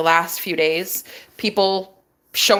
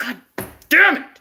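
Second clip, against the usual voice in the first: mock fed-up, mad outburst, pitched up; 7 semitones higher than usual. Retelling a man's reaction to hearing the Airbnb story: imitating an angry man. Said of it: "So he's all mad".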